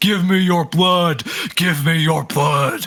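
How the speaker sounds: shouting, repeated loudly. Describing something charging at a blind troll in its cave, shouting. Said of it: "starts shouting at you like".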